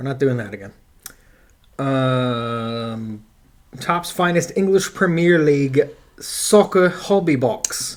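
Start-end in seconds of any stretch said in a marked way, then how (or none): 3.8-8.0 very strong put-on Australian accent, laid on. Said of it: "You went very Australian there".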